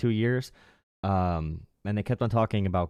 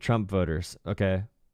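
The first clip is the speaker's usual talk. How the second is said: plain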